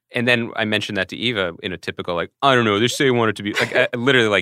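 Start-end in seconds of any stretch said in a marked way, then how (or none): 2.4-3.5 put-on sulky, petulant teenage voice. Retelling reading texts from prep aloud in the voice of a petulant teenager. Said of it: "in the voice of a petulant teenager".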